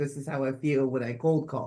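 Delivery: ordinary delivery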